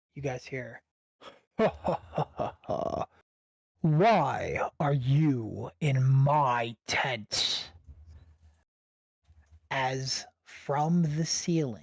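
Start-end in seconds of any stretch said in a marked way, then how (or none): 1.5-7.7 very deep, slow, drawn-out voice and laugh. Narrating to the players as an unseen voice in their tent; very deep voice. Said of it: "you guys hear a very deep voice".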